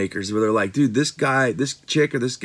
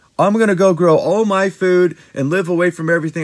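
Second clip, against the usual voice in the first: put-on high, loud, snooty, condescending little voice; 7 semitones higher, 7 dB louder than usual. Mimicking what people say about living off grid, in a mock condescending voice. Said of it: "I made that little condescending voice".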